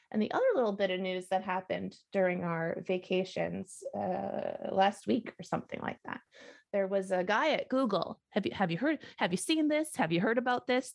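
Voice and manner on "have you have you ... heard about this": pitched-up, halting talk-show host voice. Asking the others about a news story: David Letterman impression. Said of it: "This is my David Letterman impression".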